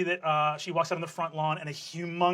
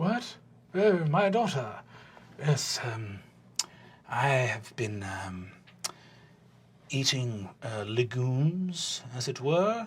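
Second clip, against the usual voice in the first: halting, quieter character voice; 5 semitones lower, 5 dB quieter than usual. Answering a knock at the door, the character greets a daughter: low, halting Gilear voice. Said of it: "[low, halting voice]".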